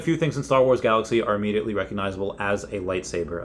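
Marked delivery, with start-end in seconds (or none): none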